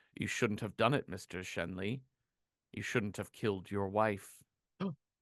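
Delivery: dull automated voice. Retelling a story where an intercom speaks to Mister Shenley, dull automated voice. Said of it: "a dull, uh, automated voice be like".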